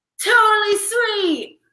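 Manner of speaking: very high, loud surfer-dude turtle voice. Asked to repeat the phrase, [name] answers, talking like a turtle. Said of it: "You're talking like a turtle".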